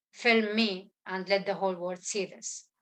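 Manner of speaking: usual speaking voice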